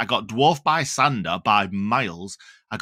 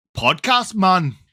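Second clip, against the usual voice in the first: bad Norwegian accent that sounds Jamaican; 7 semitones higher, 4 dB louder than usual. Trying again to do what he said, do a bad Sander impression, Norwegian accent turned Jamaican. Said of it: "that's Jamaican again".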